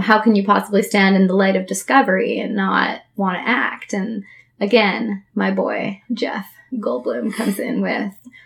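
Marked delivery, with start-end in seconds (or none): none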